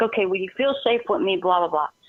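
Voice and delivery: ordinary talk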